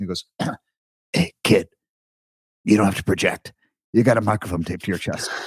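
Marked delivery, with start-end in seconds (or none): 1.1-5.3 gravelly, rough-edged, raspy voice. Recalling sharing a small capsule with Roy Scheider when he gave advice: gravelly Roy Scheider voice. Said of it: "he's got this gravelly voice".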